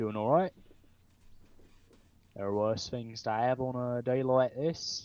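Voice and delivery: put-on Australian-accented speech. Voicing a guard who answers a greeting: Australian accent. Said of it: "here's one Australian accent".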